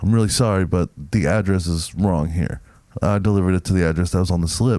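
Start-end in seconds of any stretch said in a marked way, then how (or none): none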